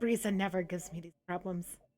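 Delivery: grumbling under breath. A game master voices a woman who shakes her head: muttering. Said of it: "just mutters like".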